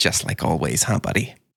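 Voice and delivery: mumbling under breath. Playing a hurt character who turns away and speaks to Davy: muttering. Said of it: "mutters to Davy".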